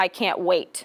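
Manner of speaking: flat, dull, completely unenthusiastic delivery. Speaker explaining tone of voice gives an example, flat and unenthusiastic. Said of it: "or lack thereof".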